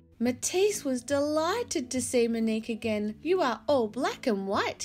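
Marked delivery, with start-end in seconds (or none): 3.2-4.8 teasing, louder, higher, faster. The new owner, delighted to see a visitor again, teases her; teasing. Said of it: "he teased".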